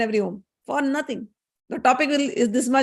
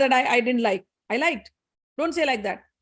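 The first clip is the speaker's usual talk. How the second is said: ordinary talk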